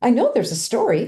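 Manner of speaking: chirpy, small, perky little voice. Recalling a woman who helped clean up, mimicking her little perky voice. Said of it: "she'd say in this little perky voice".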